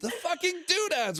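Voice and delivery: play-acted, very high-pitched, shrill scream of frustration. Recounting getting killed in a game dungeon, retelling a scream. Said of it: "And I just screamed".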